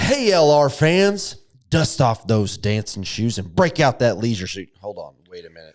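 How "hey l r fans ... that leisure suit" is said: TV commercial announcer voice, ad read. Speaker reads as if on a TV commercial for LR fans, TV commercial announcer voice. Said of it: "Like if I was on a commercial".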